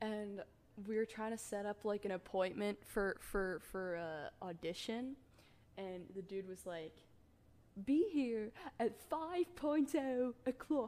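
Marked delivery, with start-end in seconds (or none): 7.8-10.9 really shoddy fake British accent, loud and high. Retelling a line from an old homemade film: really bad British accent. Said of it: "in a really shit British accent".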